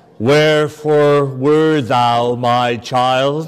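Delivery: priestly voice with a guilt-laden, reproachful tone. Retelling what he said to a firefighter on seeing her, in a put-on guilt-inducing priestly voice. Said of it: "in that priestly voice that instills great guilt".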